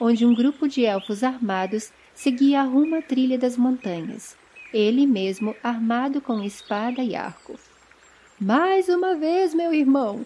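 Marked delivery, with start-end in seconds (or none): 8.4-10.3 high, carrying call across a distance. Teased by his brother from a bridge, an elf answers him; shouting back. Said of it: "Gritou Finrod de volta".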